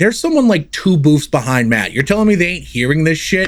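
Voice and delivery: ordinary talk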